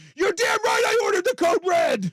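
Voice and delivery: furious shouting, very high and loud. Mocking a coach who wanted a movie moment, mock-angry Jack Nicholson yelling. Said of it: "go full Jack there and just start yelling".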